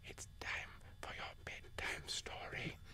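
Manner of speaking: very quiet whisper. Playing an ASMR coach telling children a bedtime story: whispering. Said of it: "Like very quiet".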